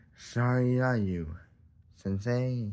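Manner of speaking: slow, derisive, taunting, mocking delivery. Retelling what a man said while interrupting meditation: imitating a mocking tone. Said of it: "a mocking tone".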